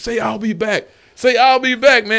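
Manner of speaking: high, loud, eager pleading voice.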